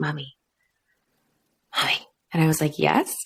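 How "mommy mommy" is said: put-on soft, hushed, childlike little whisper. A mother recounts her son turning to her, retelling a child's whisper. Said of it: "he kind of whispers".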